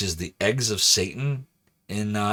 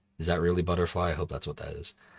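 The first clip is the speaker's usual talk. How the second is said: ordinary talk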